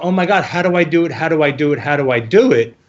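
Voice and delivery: plain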